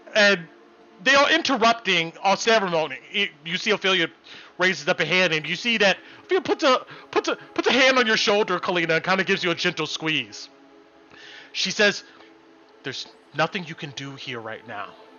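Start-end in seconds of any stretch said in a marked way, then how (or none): 12.9-15.0 soft, hushed half-whisper. Voicing a character speaking quietly to a player: half-whispering. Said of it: "She whispers that to you".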